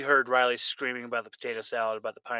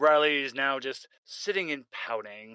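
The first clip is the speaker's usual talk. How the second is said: usual speaking voice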